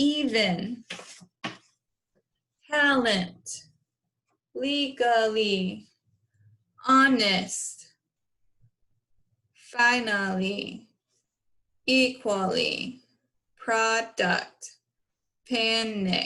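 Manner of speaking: slow robotic speech, one word at a time. A teacher demonstrates sounding out words for the class: slow robot talk. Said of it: "So you want to say it slow".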